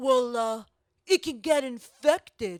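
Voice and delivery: slow-witted, dim, dumb-guy voice. Retelling what one guy answered when asked, in a dumb-guy impression of men. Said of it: "That's my impersonation of men in general".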